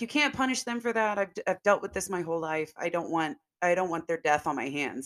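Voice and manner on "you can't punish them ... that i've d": plain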